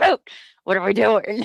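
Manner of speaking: acted fed-up, frustrated tone. Retelling what was said to the lawyer during the trial: retelling own frustrated words. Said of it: "I remember being so frustrated with him during the trial".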